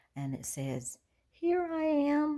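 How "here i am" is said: faint, tiny, very high little voice. Retelling searching for Liz, who answers from up a tree, imitating Liz's tiny little voice. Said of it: "we hear this tiny little voice that is way up high".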